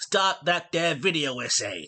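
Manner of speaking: put-on New Jersey Italian accent. Opening a Sopranos video essay, the host tries a line in attempted Italian accent. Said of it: "the only attempted Italian accent".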